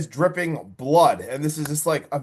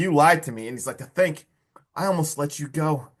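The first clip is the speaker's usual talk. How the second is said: put-on angry voice. Retelling a movie villain who catches a boy lying: imitating an angry voice. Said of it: "he's, like, angry again".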